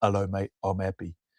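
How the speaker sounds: flat monotone, no change in tone. Retelling how a man greeted him while shaking hands, flat monotone voice. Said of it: "it was very monotone".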